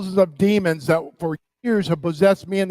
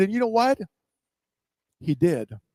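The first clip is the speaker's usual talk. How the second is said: ordinary talk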